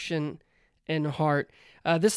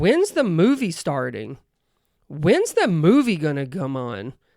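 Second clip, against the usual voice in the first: put-on child voice, spoken aloud, swooping pitch, not whispered; 4 dB louder than usual. Retelling a child asking during movie previews: imitating a child asking aloud, not whispering. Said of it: "not whisper, nothing, he would just ask".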